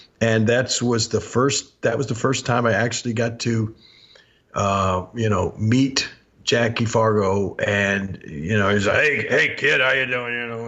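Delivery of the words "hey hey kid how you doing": big, rough, hefty, gruff voice. Retelling meeting a wrestling star who greets him: imitating a big gruff voice. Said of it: "he's just a big gruff voice".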